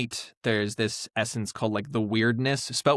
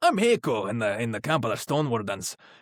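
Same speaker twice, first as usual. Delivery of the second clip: sing-song put-on Scottish accent. Showing how they talk when voicing a game character: scottish accent. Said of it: "I'm talking like this".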